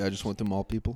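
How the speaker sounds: put-on thick, heavy Russian accent. Retelling a fighter's press conference answer, thick russian accent. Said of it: "a thick Russian accent".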